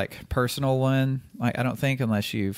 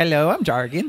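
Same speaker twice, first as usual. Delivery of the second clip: put-on plain Swedish accent, pitched up; 5 semitones higher, 4 dB louder than usual. Retelling meeting a man who introduced himself, in Jargon's Swedish accent. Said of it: "he said it with a Swedish accent".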